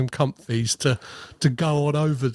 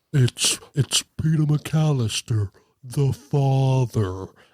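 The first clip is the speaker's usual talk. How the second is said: slowed-down tape-recorder voice, every word dragged out. Describing a boy faking his father's voice, the speaker imitates it: Kevin McAllister Talk Boy voice. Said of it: "that slowed down voice that Kevin McAllister does on his Talk Boy".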